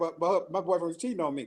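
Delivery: ordinary talk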